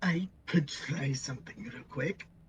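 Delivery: whispered under the breath, hushed and breathy. A player at the game table tells the group a plan, whispered. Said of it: "I whispered".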